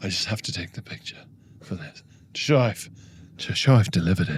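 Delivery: hushed, low, close murmured voice. Retelling what a delivery man said while taking a photo, imitating his hushed voice. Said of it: "speaking to me in like a hushed voice".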